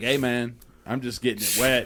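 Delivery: put-on Arkansas accent. Imitating Bill Clinton joking about a scandal: Bill Clinton impression with Arkansas accent. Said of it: "Bill Clinton's like".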